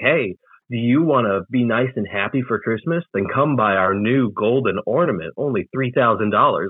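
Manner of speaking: normal talking voice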